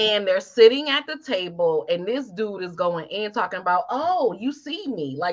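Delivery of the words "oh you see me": mock, very slow, drawn-out sarcastic drawl. Retelling what a man said at a party table: imitating a sarcastic tone. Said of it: "trying to be all sarcastic".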